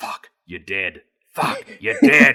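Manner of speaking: muttering under the breath. Retelling own reaction while watching the movie: imitating muttering under breath. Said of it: "I'm just saying under my voice".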